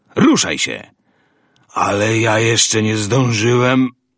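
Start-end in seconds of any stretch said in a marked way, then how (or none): 1.8-3.9 garbled, incoherent, slurred mumbling babble. Roland's companion answers after being told to get moving, mumbling incoherently. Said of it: "wybełkotał jego towarzysz".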